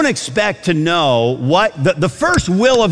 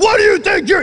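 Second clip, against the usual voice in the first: mock in-your-face, very high, spitting drill-sergeant yell. Describing a drill sergeant right in your face, imitating a yelling drill sergeant. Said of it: "he's spitting when he's yelling".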